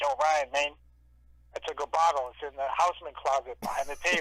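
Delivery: raspy, rough-edged street guy voice. Retelling what a street dude told him, imitating Carlos's raspy voice. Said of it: "Carlos had like a raspy voice".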